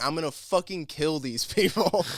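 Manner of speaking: play-acted, mild, hyped-up half-shouted yell. Retelling a player walking out of the tunnel: imitating someone screaming.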